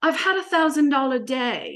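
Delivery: put-on offhand, nonchalant Australian accent. Retelling a group coaching Zoom call, the speaker imitates Joe's Australian accent. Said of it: "in this beautiful Australian accent".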